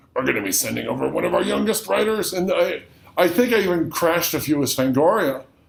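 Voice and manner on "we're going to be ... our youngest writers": fake, creaky elderly man's voice. Retelling a phone call with a publicist: put-on old man voice. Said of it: "I could do this old man voice".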